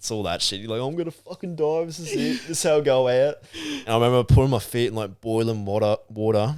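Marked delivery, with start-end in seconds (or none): 0.9-3.4 high, panicked screaming in terror. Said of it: "screaming me little fucking head off".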